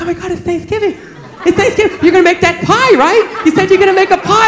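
excited, eager, chirpy delivery.

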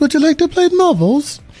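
put-on very high-pitched, piping young boy voice. Talking about playing marbles, speak like the orphan boy in an Oliver Twist voice. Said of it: "You sound like the orphan boy".

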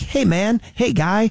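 high, slow, drawn-out cartoon Canadian accent. Describing a South Park-style cartoon's Canadian character, in the South Park Canadian voice. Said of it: "their typical voice for the Canadian guy".

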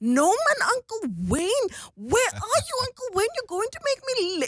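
put-on thick, very high-pitched, swooping Cape accent. A parent retells their daughter playing the boss calling Uncle Wayne, in a heavy Coloured accent. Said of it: "speak in this colored accent".

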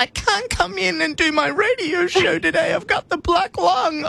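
put-on sick voice, very high-pitched. Showing the call-in-sick routine expected around here, in a fake sick voice. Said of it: "Give me a sick voice".

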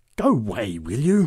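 words growled out. A big woman moves toward a one-armed man, growling. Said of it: "growled the big woman".

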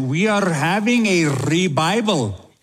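put-on Indian accent. Retelling a man in India talking to his friend about revival: imitating an Indian accent. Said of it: "in a beautiful Indian accent".

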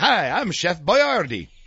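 put-on slow, drawn-out old horror-film vampire drawl. Recalling old commercials, imitating how Chef Boyardee said his name. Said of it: "You sounded like Dracula".

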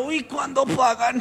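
high, slow, drawn-out, eager voice.

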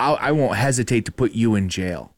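put-on menacing tone. Retelling how she threatened the speaker, mock-threatening. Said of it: "She threatened me".

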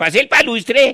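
put-on Russian accent. Showing how lowered hat earflaps make you sound russian, fake russian accent. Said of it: "queda hablando como ruso".

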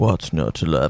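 put-on low, deep radio announcer voice. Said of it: "He's got a deeper voice".

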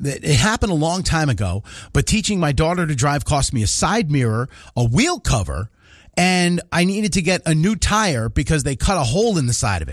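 ordinary delivery

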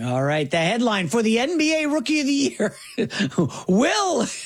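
speaking while cracking up laughing. Asked for a Rookie of the Year headline, the speaker answers laughing while talking. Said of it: "Why are you laughing?".

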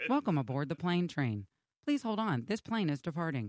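flat, neutral, low, level recorded announcer voice. Imitating the airport train's automated announcement: monotone Plane Train announcer. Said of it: "She's so monotone".

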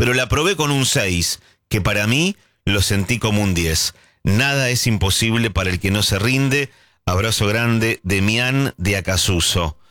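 ordinary delivery

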